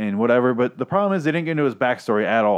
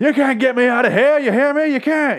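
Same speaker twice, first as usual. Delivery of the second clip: play-acted, very high, old-TV style dramatic yelling; 13 semitones higher, 4 dB louder than usual. Retelling a character's breakdown on the stairs: imitating Twilight Zone yelling. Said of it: "He does a Twilight Zone yelling".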